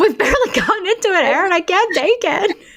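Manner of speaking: pitched very high, on the brink of tears. Barely into the podcast episode, talking with Erin, on the brink of tears. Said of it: "I'm already on the brink of tears".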